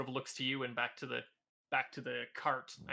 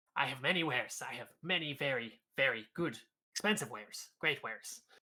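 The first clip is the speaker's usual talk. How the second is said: scruffy goblin voice with eager, quick patter. Game master voicing a goblin merchant greeting customers, goblin merchant voice. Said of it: "you see another goblin wearing very tatty, almost noble's clothing. Like you can see it was once perhaps some sort of suit with buttons, and atop his head sits a very disheveled, crooked, sort of dent".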